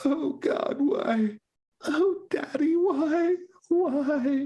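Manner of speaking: loud, very high wailing sobs, "why" stretched. Narrating a scene, voicing a young woman on a couch, with loud sobbing. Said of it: "she's sobbing quite loudly".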